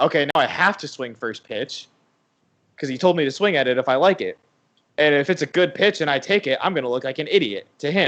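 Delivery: plain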